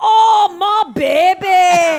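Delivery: shrill, booming, exaggerated put-on voice, very high, drawn-out "baby". Recalling a voice she did while pregnant, Fat Bastard voice. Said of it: "I would do a fat bastard voice all the time".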